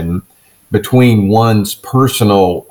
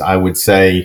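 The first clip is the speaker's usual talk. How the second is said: ordinary delivery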